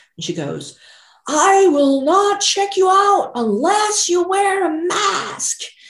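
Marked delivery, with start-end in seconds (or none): 1.3-5.6 play-acted shrill, very high, drawn-out screaming. Retelling what a cashier in the checkout line said: imitating a cashier screaming. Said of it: "she screamed really loud at me".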